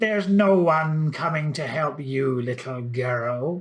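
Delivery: put-on hissing witch voice, "girl" drawn out. Narrator reads the witch Henrietta answering Lisa Marie's cry for help, Henrietta's witch hiss. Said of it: "hissed Henrietta".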